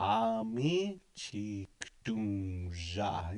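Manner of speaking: deliberately slow, drawn out. Speaker modeling a phrase for listeners to practice, very slow. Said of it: "You say it real slow like that".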